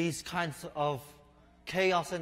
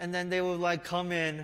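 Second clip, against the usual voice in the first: ordinary delivery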